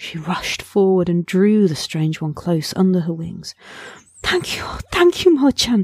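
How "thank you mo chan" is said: overcome, barely getting words out, much higher. A mother bird, her chick found safe, speaks to the great bird, overcome. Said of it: "She could hardly whistle".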